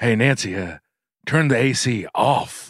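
very slow, deliberate drawl, every word stretched. Speakers trading impressions; one does a Reagan impression. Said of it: "That's my impression of".

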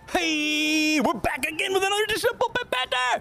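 put-on high voice. Opening the Bullpen Banter segment as host, high-pitched voice. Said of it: "High pitch voice here".

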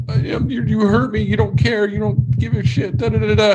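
high, near-tearful, pleading wail. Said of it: "almost in tears going".

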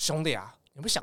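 put-on Shanghai accent. Quoting a man who speaks with a Shanghai accent, in a Shanghai accent. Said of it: "你要用上海他上海的口音说".

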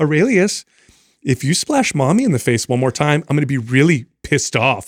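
sugary, polite fake-nice tone over annoyance. Retelling a mother warning her splashing child, imitating a nice voice. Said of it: "she uses this nice voice".

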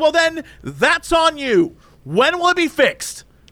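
high, drawn-out yelling. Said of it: "yelling at this poor guy".

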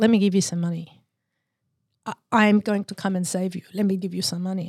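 put-on Greek Cypriot-accented voice. Retelling his dad's offer of money when he had nothing: Greek Cypriot accent. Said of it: "in his beautiful Greek Cypriot accent".

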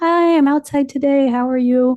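high, loud, bright, fake cheery tone.

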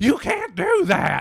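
very loud, shrill, high, drawn-out yell. Retelling how a woman at a show scolded a photo: imitating a woman yelling loudly. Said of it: "this woman was there started yelling at me".

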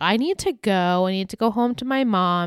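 normal talking voice

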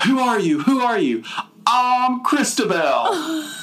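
put-on terrible, swooping, very high-pitched Southern accent. Mock the performance you find so awful, doing Linda Blair's really bad Southern accent. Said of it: "doing like this really bad Southern accent".

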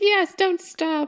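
seductive, come-hither tone. Retelling the scene where Satine misreads a poem, imitating Satine's seductive voice.

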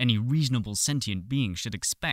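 ordinary delivery

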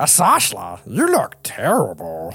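big, swooping, sing-song put-on character voice. Storyteller voices Bumgazzle addressing the Unbrood leader, in Bumgazzle voice. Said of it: "Sorry, I forgot voices".

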